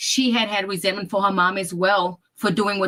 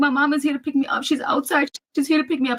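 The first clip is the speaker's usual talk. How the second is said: put-on weepy crying, tearful, high-pitched, insistent; 7 semitones higher than usual. Retelling how the daughter ran in saying her mama came: imitating someone crying. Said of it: "She's crying, y'all".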